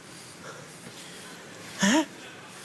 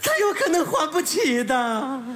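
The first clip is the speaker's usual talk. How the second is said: crying, high, slow, tearful sob. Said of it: "你别哭了".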